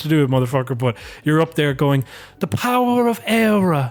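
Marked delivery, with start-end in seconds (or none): 2.4-3.9 put-on posh anglicized Irish accent, high and very drawn out. Mocking an Irish person who somehow has an English accent, in a West Brit Declan Ganley voice. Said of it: "West Brit sounding voice".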